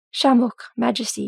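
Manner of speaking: usual speaking voice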